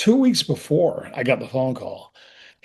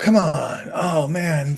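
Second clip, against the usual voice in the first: mock very slow, drawn-out pleading; 2 semitones higher than usual. Retelling a call about being written off the show: retelling pleading. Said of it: "you're really, like, pleading for your life".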